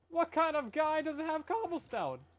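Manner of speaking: voice cracking up very high. Speaker looking through someone's storage system, voice crack. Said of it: "Voice crack, don't worry about it".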